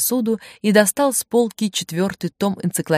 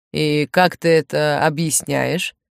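usual speaking voice

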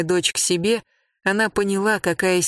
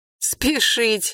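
high, contemptuous, scornful sneer; 5 semitones higher than usual. A young man answers a woman urging him not to hurry, with a scornful sneer. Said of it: "презрительно усмехнулся юноша".

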